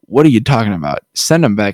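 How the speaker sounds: furious, outraged, exasperated and fed-up delivery. Retelling a book scene where nobody listens: imitating furious Rand. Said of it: "he's getting furious 'cause nobody's listening".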